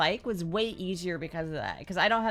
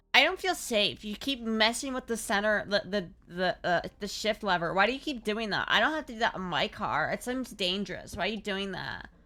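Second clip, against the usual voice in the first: ordinary talk, nothing marked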